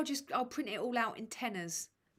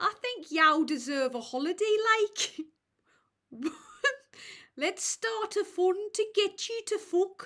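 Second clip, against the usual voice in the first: very high, loud Brummie accent; 10 semitones higher, 8 dB louder than usual. Wondering which accent is coming out, the speaker tries a line in a brummie accent. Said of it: "is this Brummie?".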